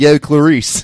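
put-on Baltimore accent. Joking that a film villain is from Baltimore in the book: Hannibal Lecter with Baltimore accent. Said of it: "imagining the fictional character with a more accurate accent".

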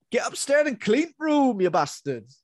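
loud, very high, bad northern English dad voice. Imitating a northern dad from an old British drama: terrible northern dad impression. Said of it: "That's terrible, sorry".

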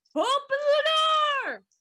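shrill, very high, loud shouted yell. Player announcing a character's yell, then yelling. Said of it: "I'm going to yell".

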